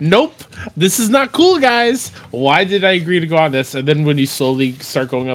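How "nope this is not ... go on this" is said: mock jittery, rattled yelling, pitched up. Retelling a ride while nervously yelling at the animatronics: imitating nervous yelling. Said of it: "nervously just yelling at the animatronics".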